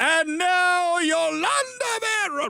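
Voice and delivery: put-on Spanish accent, high and drawn out. Retelling a comedy sketch about a baseball announcer: imitating a sudden put-on spanish accent. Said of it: "All of a sudden we have an accent".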